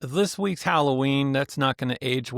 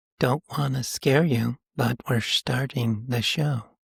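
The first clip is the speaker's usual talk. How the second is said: public-radio host announcer manner. A co-host demonstrates how to open the show, in an NPR voice. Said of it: "your N P R voice and talk like".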